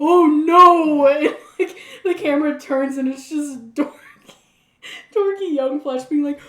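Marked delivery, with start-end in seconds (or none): 0.0-1.1 very loud, long, drawn-out horrified wail. Retelling a scene where a character looks through the window: horrified cry. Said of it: "his horrified look, like".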